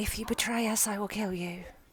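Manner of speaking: very quiet, hushed half-whisper. Playing Riv during an embrace, speaking into his ear: half-whispering a threat. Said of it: "Riv is going to whisper in his ear".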